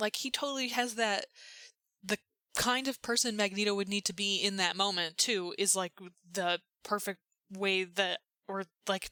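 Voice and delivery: excited, stumbling stutter, tripping over words. Speaker agreeing about Fassbender in a Magneto story: excited stuttering. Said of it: "I'm just like stuttering because I'm oh, I'm so excited".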